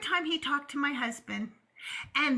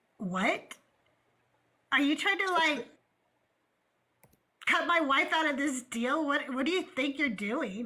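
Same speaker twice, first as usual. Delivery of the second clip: play-acted angry, indignant voice. Retelling a husband confronting car dealers: imitating an angry husband. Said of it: "my husband was pissed".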